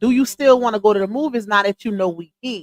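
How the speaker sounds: ordinary talk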